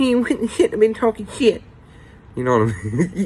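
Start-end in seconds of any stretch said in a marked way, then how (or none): 0.0-1.6 squeaky, very high-pitched voice. Retelling what a man would say looking down at the speaker, in a Mickey Mouse voice. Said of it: "he would say in his little Mickey Mouse voice".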